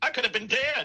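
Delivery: shocked, very high-pitched squeak. Describing the look on his face after the pie: imitating Bill Gates shocked.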